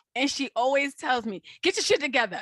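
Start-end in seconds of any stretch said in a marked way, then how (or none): 1.7-2.4 put-on super assertive, forceful, borderline aggressive voice. Imitating a strong inner voice that tells her off: imitating an aggressive inner voice. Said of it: "borderline aggressive, but, like, super assertive".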